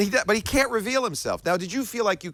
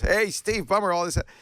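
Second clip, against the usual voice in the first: put-on nasal laughing voice, higher pitch; 3 semitones higher than usual. Acting out a phone call from Bill Gates: Bill Gates nasal laughing voice. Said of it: "laughing in that nasal voice of his".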